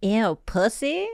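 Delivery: put-on, exaggerated, flamboyant caricature voice.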